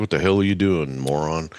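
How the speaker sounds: speaking in a moose voice. Retelling how curious moose in the woods stared: voicing a staring moose. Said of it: "They'd come out of the woods and stare at me like".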